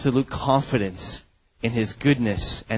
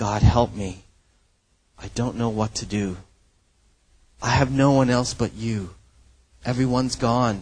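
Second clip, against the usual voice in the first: acted-out crying out. Voicing an abandoned man's plea to God, imitating someone crying out. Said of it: "he's crying out".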